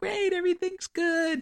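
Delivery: mock high-pitched voice. Describing the woman checking the bars, imitating her very high-pitched voice. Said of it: "She has the highest pitched voice".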